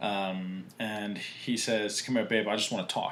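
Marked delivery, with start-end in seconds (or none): 2.0-3.1 put-on fast, assertive, pushy, aggressive coaxing tone. Retelling what a driver said after getting out of his car, imitating an aggressive tone. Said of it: "a very aggressive tone".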